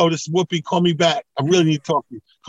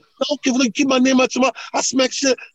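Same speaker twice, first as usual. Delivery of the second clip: put-on irate Philadelphia street voice, higher; 7 semitones higher than usual.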